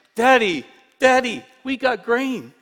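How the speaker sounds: eager, high, loud, bursting excited shout. A young boy comes running to his father: excited shout. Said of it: "He shouts".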